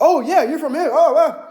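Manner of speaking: very high-pitched, loud delivery. Showing how not to talk to a woman, in a loud, high-pitched voice. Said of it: "Don't be loud and high pitched".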